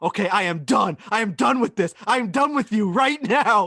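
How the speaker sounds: acted, shrill, loud scream. Reading out the golfer's quote at the range: imitating Bryson screaming at himself. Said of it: "He's screaming at himself".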